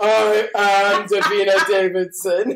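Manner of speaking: slow, loud, grand, grandiose dramatic announcing voice.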